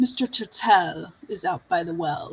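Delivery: put-on prim and proper butler voice. Telling a story, the speaker voices the butler answering Rabbit: prim and proper butler voice. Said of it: "the butler says".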